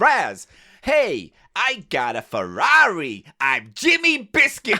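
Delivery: bad put-on American accent. Failing at an American accent, the speaker does a bad American-accent Jimmy Biscuits voice. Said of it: "I can't do American accents".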